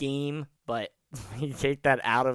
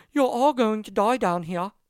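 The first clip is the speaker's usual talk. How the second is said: very high, loud, fake bad British accent; 10 semitones higher, 7 dB louder than usual. Retelling a little girl robot's line before it shuts down, bad British accent. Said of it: "That's a bad British accent I just did".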